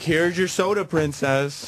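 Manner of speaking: mock snide, sweetly pointed, needling passive-aggressive delivery. On a radio show, retelling the man who slammed the door, imitating a passive-aggressive tone. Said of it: "he's smiling like passive aggressive".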